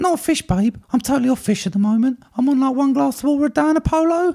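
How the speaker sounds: voice way up high. Playing Shanice answering Ghostface's phone call: Shanice voice. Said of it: "called Shanice".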